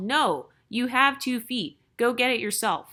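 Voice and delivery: ordinary talk, nothing marked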